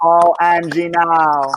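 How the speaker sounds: put-on Jamaican accent. Host quoting a phrase social media began coining, in a Jamaican accent. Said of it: "That's my Jamaican accent".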